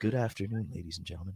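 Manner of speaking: hushed, televised golf commentary announcer voice. Praised for sounding like a golf announcer, greeting the audience in golf announcer voice. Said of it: "sounding like a golf announcer".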